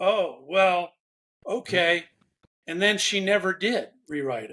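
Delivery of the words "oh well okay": acted grudging, unwilling, hesitant, reluctant tone. Retelling someone's answer to advice to rewrite her letter: imitating a reluctant reply. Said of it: "I could just hear the reluctance in her voice".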